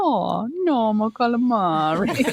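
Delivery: fake Italian accent, high, very slow, drawn way out. Quoting a little girl's catchphrase, in a put-on italian accent. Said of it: "an Italian accent when she did it".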